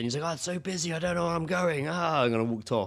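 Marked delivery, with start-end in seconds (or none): 0.3-1.9 put-on drunk man voice, higher. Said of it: "he was a bit pissed, ... drunk".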